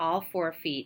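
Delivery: ordinary delivery, nothing marked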